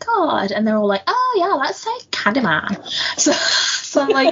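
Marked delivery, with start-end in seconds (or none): 1.1-2.9 bad put-on American accent, high and swooping. Retelling high schoolers in a toilet daring each other: bad American accent. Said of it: "that's the best American accent I can do".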